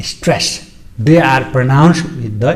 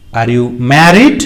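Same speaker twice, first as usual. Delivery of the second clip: pitch climbs, rising intonation on "married". Intonation lesson on yes-no questions, rising on married. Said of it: "So that is rising".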